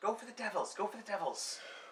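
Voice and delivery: high-pitched shouted yell in character voice. Voicing someone in the scene calling out an attack order: yelling in character. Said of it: "someone yelling in Undercommon".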